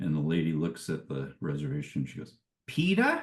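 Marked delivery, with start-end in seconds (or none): 2.7-3.2 put-on very high, thick, total Boston accent. Retelling how a lady read out a reservation name, in a total boston accent. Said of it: "Like this total Boston accent".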